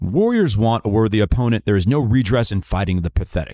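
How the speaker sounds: ordinary talk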